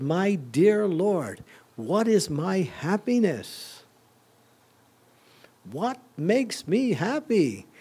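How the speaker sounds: slow, high-pitched, emphatic delivery. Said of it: "he says it emphatically".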